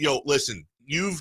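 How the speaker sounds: ordinary talk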